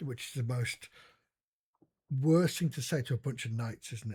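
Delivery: ordinary delivery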